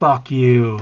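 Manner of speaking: whispered insult tone. Whispering an insult at a character's sword: whispering in character. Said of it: "I whisper".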